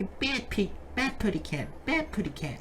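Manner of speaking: high cartoon bird voice impression. Recalling a favorite childhood cartoon character, Tweety Bird voice. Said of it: "that bad impression of Tweety Bird".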